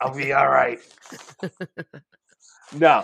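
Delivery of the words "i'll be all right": put-on hoarse chain-smoker voice, louder. Teasing another speaker by imitating Vince's hoarse smoker voice. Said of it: "you sound like you just chain smoked three packs of fucking Newport".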